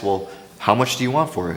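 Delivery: ordinary delivery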